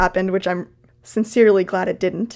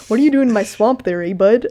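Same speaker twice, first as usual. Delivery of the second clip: put-on hoser-style Canadian accent; 3 semitones higher, 3 dB louder than usual. Imagining Shrek lines spoken as a Canadian, Canadian-accent Shrek voice. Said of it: "like a hoser Shrek".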